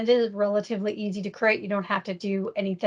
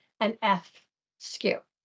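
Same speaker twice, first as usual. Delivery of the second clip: very slow, drawn-out, careful, deliberate wording. Presenter spelling out a license acronym so it doesn't sound bad: very slowly. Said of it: "I have to say this very slowly".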